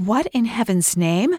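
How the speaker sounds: gasping. Annie, brought to the Palace Hotel by her new husband, gasped. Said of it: "Annie gasped".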